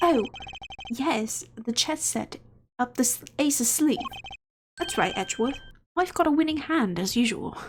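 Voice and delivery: put-on character voice with British accent. Voicing a game character who addresses edgeworth: put-on british accent. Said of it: "pull out this British accent".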